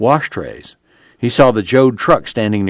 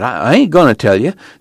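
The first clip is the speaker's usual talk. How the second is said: usual speaking voice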